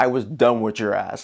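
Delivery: low, pointed, insinuating mock tone.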